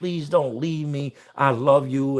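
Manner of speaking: mock sobbing, mimicked crying. Retelling how a man in another zone pleaded, imitating someone sobbing. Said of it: "And he's just sobbing".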